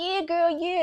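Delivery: very high, upbeat, encouraging voice. Recounting a friend's text reply about cutting her hair, imitating Vaughn. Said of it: "in her in her voice that I interpret".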